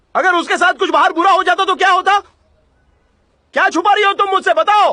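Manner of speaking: shouting angrily. Demanding to know what the other is hiding about a girl skipping school, shouting angrily. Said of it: "अरे यार चिल्ला मत।".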